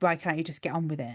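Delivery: ordinary talk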